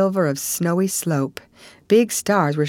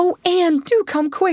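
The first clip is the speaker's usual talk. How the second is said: anxious, nervous, high-pitched imploring pleading; 12 semitones higher than usual. Diana, with Minnie May sick and her parents away, implores Anne nervously. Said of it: "implored Diana nervously".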